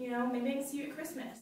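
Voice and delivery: ordinary talk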